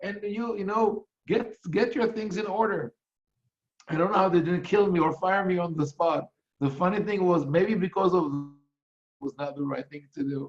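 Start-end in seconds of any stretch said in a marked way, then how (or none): 0.0-2.9 yelling, higher pitch. Retelling scolding the people fighting over a stanza: retelling own yelling. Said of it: "I turned to them and I yelled at them".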